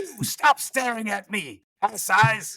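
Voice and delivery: shouting. In character, calling to citizens and guards to find a man: shouting directions. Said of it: "I'm shouting directions".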